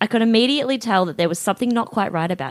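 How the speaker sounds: ordinary delivery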